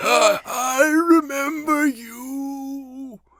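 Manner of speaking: raspy, creepy villain voice, very high, very slow. Describing a man's creepy voice and quoting his line: raspy creepy voice. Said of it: "really raspy and just like he kind of pitches it perfect".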